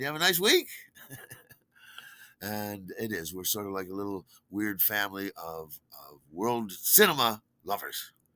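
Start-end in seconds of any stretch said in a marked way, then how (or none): 0.0-0.7 high, chirpy, bright voice. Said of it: "you're like".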